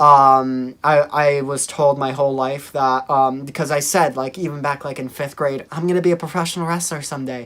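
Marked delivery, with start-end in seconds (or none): 5.7-7.5 tiny, soft, quick, kitten-like voice. Recalling what they said as a fifth grader, the speaker uses a little kitty voice. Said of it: "my little kitty voice".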